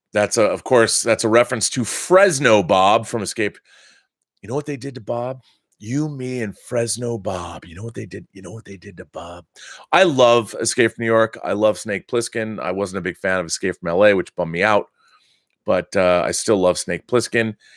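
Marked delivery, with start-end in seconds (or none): 4.4-9.4 very quiet, murmured movie action antihero voice. Speaker quoting Escape from New York, in a Snake Plissken voice. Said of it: "in a Snake Plissken voice".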